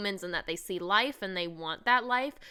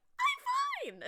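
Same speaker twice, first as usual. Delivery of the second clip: very high squeaky pretend-fine voice, "I'm" drawn out. Recounting a Friends episode where Ross is surprised, Ross's very high voice. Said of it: "in a very high voice".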